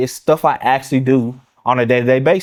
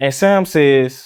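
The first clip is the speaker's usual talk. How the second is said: usual speaking voice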